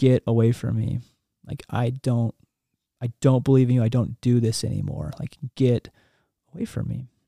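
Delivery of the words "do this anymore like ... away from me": normal talking voice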